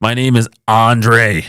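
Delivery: slow, easy drawl, words drawn out. Acting out how a man called Andre gives his name, in a Jack Nicholson tone. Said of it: "He's got that Jack Nicholson tone".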